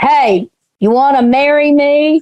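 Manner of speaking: calling out high and slow. Voicing a smith calling across to the party: yelling at the top of his lungs. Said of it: "he says in it at the top of his lungs".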